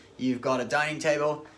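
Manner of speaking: ordinary talk, nothing marked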